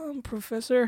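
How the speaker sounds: airy, breathy voice. Mimicking how a girl with her camera on addressed the speaker, breathy voice. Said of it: "Real breathy".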